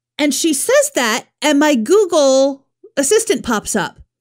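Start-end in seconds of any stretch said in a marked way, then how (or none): none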